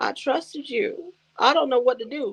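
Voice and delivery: poor, pitiful-sounding voice. Retelling how a betrayed Jay stood in the corner: imitating poor Jay. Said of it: "poor Jay was standing in the corner like".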